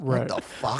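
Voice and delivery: put-on upset, fed-up, angry father outburst. Retelling a friend's dad getting upset at them laughing: imitating an angry dad. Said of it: "angry that we found it so funny".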